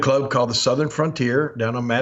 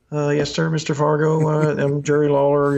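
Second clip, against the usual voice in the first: put-on hesitant, nervous, awestruck, starstruck kid voice; 2 semitones higher than usual. Retelling his own reply on first meeting a wrestling star: imitating his starstruck younger self. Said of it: "I was just starstruck".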